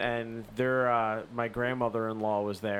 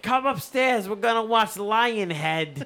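put-on thick South Philly accent, much higher; 10 semitones higher, 6 dB louder than usual. Retelling what the grandmother-in-law said, the speaker puts on her thick South Philly accent. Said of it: "In her fucking thick-ass South Philly accent".

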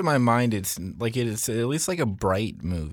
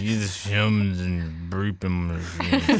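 mock drunk cat voice, lower pitch; 4 semitones lower than usual. Retelling what the cat in the movie says: imitating a drunk cat. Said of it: "this drunk cat that's just talking".

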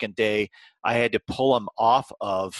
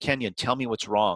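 imitated pleading tone. Retelling how they kept pleading with a crying boy: retelling own pleading. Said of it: "I kept pleading with him".

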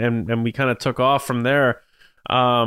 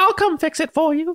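put-on elf voice, pitched higher. Retelling a pitch where Rey offers to fix the Falcon: Dobby voice for Rey. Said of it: "that sounded, like, more like Dobby than anything".

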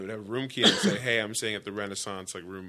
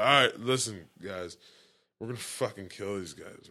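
put-on aggressive, belligerent, drunken delivery. Retelling a drunk, high teammate's team speech: imitating a belligerent drunk rant. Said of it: "have this belligerent".

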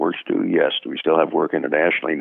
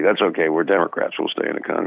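usual speaking voice

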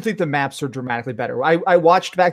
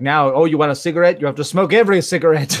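usual speaking voice

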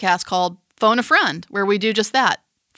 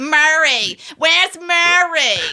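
put-on high-pitched New Jersey accent; 7 semitones higher, 3 dB louder than usual. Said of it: "it's actually more New Jersey".

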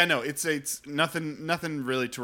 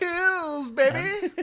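very high, very loud belted delivery; 5 dB louder than usual. Joking right after another speaker says to only do Jean-Ralphio voice. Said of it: "we only do John Ralphio voice".

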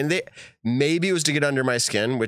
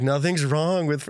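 put-on girl's voice, higher; 4 semitones higher than usual. Retelling a sidewalk interview, imitating a girl from an interview. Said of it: "I'm trying to impersonate her".

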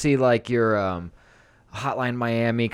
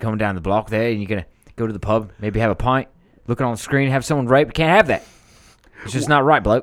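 fake Australian accent, louder; 5 dB louder than usual. Playing an outraged local about a game scene: put-on Australian accent. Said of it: "I know when to drop off, off my accent".

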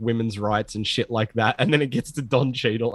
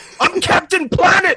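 very high, very loud, shrill excited scream; 9 dB louder than usual. Shouting a character's line as a joke: screaming. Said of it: "you just screamed".

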